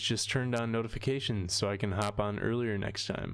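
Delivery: ordinary talk, nothing marked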